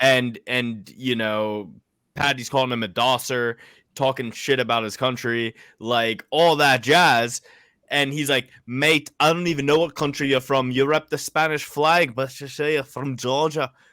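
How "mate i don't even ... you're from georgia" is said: put-on Liverpool accent. Retelling what a fighter said to his opponent: Paddy the Baddy impression. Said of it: "That was a pretty good impression".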